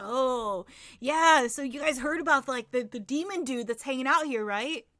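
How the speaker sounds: reptilian lizard man character voice. Voicing a lizard man driver talking to the passengers: voicing a lizard man driver. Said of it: "this is definitely just some kind of lizard man".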